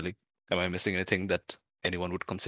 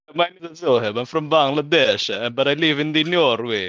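really bad put-on Italian accent, very loud and high; 7 semitones higher, 8 dB louder than usual. Introduce yourself as Zohab from Bangladesh, living in Norway, in a really terrible Italian accent. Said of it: "that was Zohib's really terrible Italian accent".

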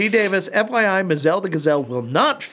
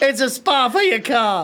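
fake Boston accent, higher pitch; 8 semitones higher than usual. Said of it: "He sounded English then".

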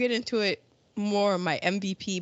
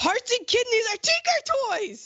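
sudden explosive yell, pitched very high. Retelling a scene where he gets mad at the lecture: imitating someone yelling. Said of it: "he just yells".

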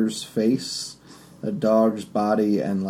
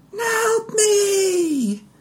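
very high woman's scream, drawn-out "me". Game narrator voicing a dog-like creature calling out, in a woman's screaming voice. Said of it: "In the same kind of woman screaming voice".

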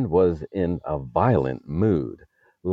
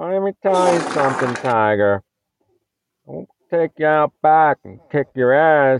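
shrill, very high, loud, squawking tough-guy voice; 10 semitones higher, 6 dB louder than usual. Doing a joke news bit, threatening a listener: Joe Biden impression. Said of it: "This is my Biden impression".

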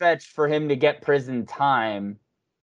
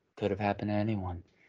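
very quiet, low, soft, subdued, low-key delivery; 5 semitones lower, 12 dB quieter than usual. Retelling how an actor had to redo his line for the trailer, softer delivery. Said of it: "they made him say it again softer".

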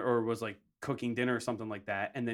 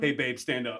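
usual speaking voice

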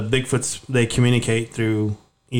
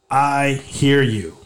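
all-out bellowing shout at top of lungs; 2 semitones higher than usual. Retelling a reply yelled out in an echoing area: retelling a yell at full volume. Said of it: "I yelled at the top of my lungs".

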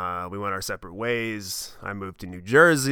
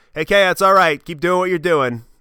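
very loud, high hollered shout; 8 semitones higher, 9 dB louder than usual. Retelling how grandfather yelled across to him: imitating grandfather yelling. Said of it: "he yells".

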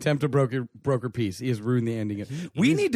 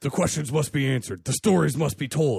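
put-on nemesis-style archvillain voice. Voicing a character addressing internet talkers, in a nemesis-style villain voice. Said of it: "let's go with a more nemesisy voice".

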